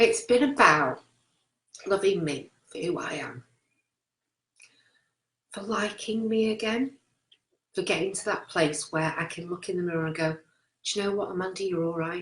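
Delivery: soft voice, full of emotion. Speaker reflecting on a personal journey: getting emotional. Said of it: "I'm getting emotional now".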